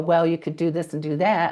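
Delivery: ordinary delivery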